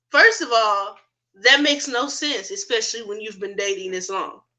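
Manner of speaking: normal talking voice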